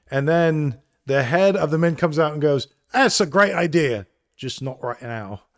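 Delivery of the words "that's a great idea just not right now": put-on British accent. Acting out the head of the mint's reply, British accent. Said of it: "I'm going to use my British accents here".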